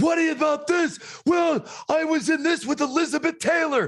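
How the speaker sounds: very high-pitched, screaming tirade. Recalling an interview where he was yelled at, imitating Mickey Rooney screaming. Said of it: "He's screaming at me in the interview".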